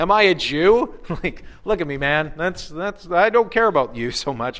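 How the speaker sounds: dripping sarcasm, scornful and mocking. Retelling Pilate's answer to Jesus's question, mock-sarcastic Pilate. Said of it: "kind of in this sarcastic way of".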